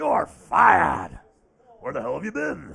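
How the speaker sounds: low, rough, swooping and swinging delivery. After thanking the fans, fire someone in a Vince McMahon impression. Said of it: "That's my Vince McMahon impression there".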